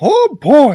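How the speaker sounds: put-on cartoon mouse voice. Showing off a Mickey Mouse impression: Mickey Mouse voice. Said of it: "this is my, uh, Mickey Mouse".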